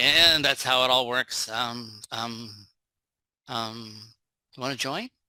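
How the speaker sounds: slow, fumbling, awkward trailing-off ending.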